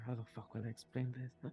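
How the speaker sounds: whispering under the breath. Voicing a character looking at his dragon: whispering under his breath. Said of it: "you just hear him whisper".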